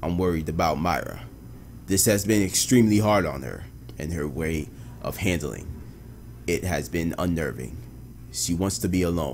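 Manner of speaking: low, hushed, weary detective narration voice. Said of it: "gotta work on my, uh, detective narration, narration voice".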